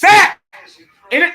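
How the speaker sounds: yelling at full volume. Watching a Niners game with viewers, reacting to a sack; screaming. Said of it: "My apologies for screaming".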